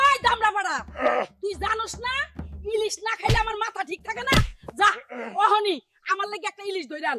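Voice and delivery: put-on high, crying, scolding old granny voice.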